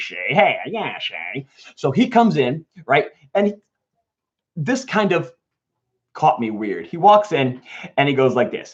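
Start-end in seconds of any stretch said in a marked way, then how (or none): 0.0-1.5 put-on tough-guy voice. Retelling the grandfather's lines in the movie: Peter Falk impression. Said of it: "He's kinda like a Muggsy".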